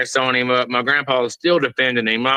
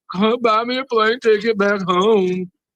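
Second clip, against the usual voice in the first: put-on crying voice, pitched higher; 9 semitones higher than usual. Retelling a crying phone call to a grandpa: imitating someone crying. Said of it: "called my grandpa two weeks later crying".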